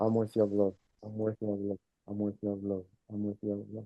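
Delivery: very quiet, soft, hushed half-whisper. Leading listeners in repeating an affirmation together: half-whispering. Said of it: "Now we whisper it".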